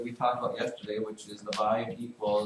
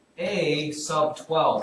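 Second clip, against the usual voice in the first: careful, deliberate, slow, clear articulation, raised voice; 5 semitones higher, 7 dB louder than usual. Reading a math expression aloud for listeners: slowly and clearly. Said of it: "I will say it slowly and clearly".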